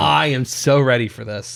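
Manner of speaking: ordinary delivery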